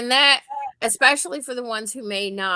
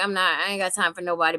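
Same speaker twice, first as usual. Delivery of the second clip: put-on standoffish, aloof kid voice; 2 semitones lower than usual. Retelling what a busy kid says: imitating a standoffish kid. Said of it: "the kid who's a little standoffish and he's too busy".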